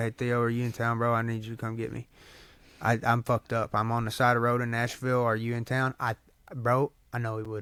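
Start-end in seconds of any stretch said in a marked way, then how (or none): none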